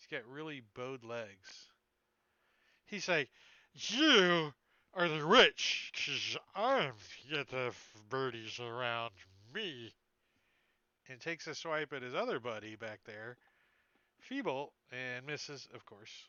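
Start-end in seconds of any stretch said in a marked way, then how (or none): 3.7-9.9 put-on loud, sloppy drunk slur, "you" drawn out. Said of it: "slurring his speech".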